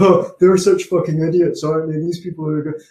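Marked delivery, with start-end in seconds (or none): 0.0-2.0 smug, self-satisfied, contemptuous, dismissive tone. Imitating smug alt-right people calling out social justice warriors, mock-smug tone. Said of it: "smug people on the alt-right calling out these social justice warriors, and their tone is always".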